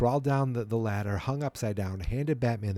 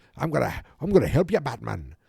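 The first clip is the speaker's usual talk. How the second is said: put-on Irish accent; 5 dB louder than usual. Retelling a scene, quoting the chief of police: imitating an Irish accent. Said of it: "always talks like he's got an Irish accent".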